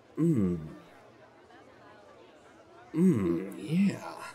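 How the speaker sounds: soft, whispered moan of pleasure. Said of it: "turned it into".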